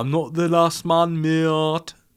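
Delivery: high-pitched, put-on Birmingham accent. Speaker tries out an accent for a listener, attempted Birmingham accent. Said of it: "Does that sound Birmingham to you?".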